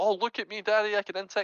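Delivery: put-on high, smug, bragging little-kid voice. Imitating a first-time Azir player showing off to dad: mocking a player as a proud kid. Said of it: "this guy's obviously just trying out Azir, so he's like".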